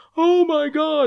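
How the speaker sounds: acted, very high-pitched, hysterical, losing-it freakout. Describing a man's video reaction, imitating his 'oh my God' thing. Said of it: "And then he does the oh my God thing".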